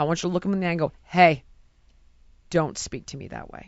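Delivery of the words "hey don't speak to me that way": calm, low, steady, scary cop-style tone. Showing how to answer someone who is mean: dropped calm tone. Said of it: "you drop your tone, and you stay calm".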